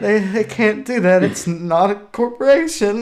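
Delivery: slow, acted, straining to hold back laughter. Retelling a reaction video, imitating someone holding back laughter. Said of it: "holding back, like, either killing himself or crying".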